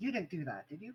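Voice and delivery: hushed, quiet, discreet voice like a priest. A game narrator voices the priest who walks up to the players in the temple, hushed voice. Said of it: "in a hushed voice".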